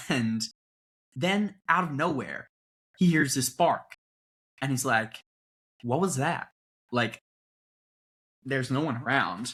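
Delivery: put-on, fake American accent. Telling a made-up story when asked to, in a put-on American accent. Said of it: "I want to hear you do your American accent".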